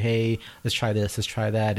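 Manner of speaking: ordinary talk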